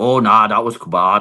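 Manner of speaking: clumsy, bad, fake Scottish accent. Imitating parents in Scotland reacting to a move: bad Scottish accent. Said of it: "That was a bad accent".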